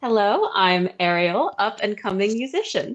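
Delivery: beaming voice, confident, with no hesitation. A character introduces herself to a cheering crowd: big beaming smile. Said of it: "will straight up just big beaming smile go".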